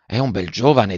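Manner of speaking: ordinary talk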